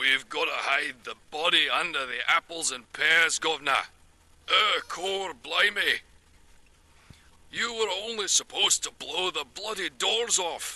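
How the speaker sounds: put-on Cockney accent. Practising a british accent for a resume, trying a cockney accent first.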